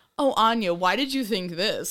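put-on baffled voice. Mocking how her spouse asks questions on the show: imitating Kevin. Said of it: "I hate it when you go on Mystery to Me and say".

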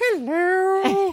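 put-on very high slow voice. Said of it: "I'm sorry".

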